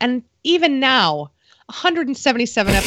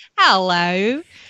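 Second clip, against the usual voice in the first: hello said in an Australian accent. The only word the speaker can do: Australian accent on hello. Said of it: "the only Australian accented word that I'm able to say is".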